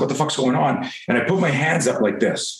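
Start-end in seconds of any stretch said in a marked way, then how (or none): none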